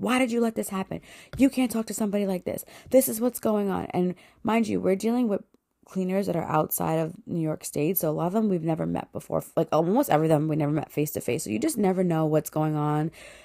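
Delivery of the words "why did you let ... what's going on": mock irate, high, accusing ranting complaint. Retelling a phone call where a person screamed at the speaker, imitating the screaming. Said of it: "this person is like screaming at me".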